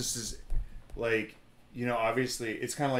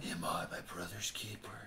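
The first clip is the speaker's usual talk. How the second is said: gruff superhero voice, very quiet; 5 semitones lower, 12 dB quieter than usual. Retelling how Cain delivers his line, gruff Batman voice. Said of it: "isn't that like the Batman voice?".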